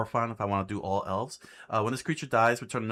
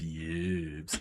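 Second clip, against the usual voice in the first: put-on trailer voice, much lower and quieter; 5 semitones lower, 5 dB quieter than usual. While going through cards, try to sound like the Honest Trailers guy voice. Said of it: "trying to sound like the guy from Honest Trailers".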